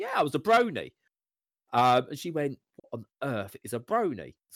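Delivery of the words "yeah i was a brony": play-acted playful, light joking tone, pitched up. Retelling answering a partner who asked how they knew My Little Pony: retelling a joking reply. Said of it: "I jokingly went".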